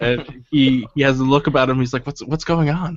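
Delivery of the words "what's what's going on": hushed stage whisper. Voicing a guard who asks what is going on as players pass: half-whispering. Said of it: "he whispers to you as you pass by".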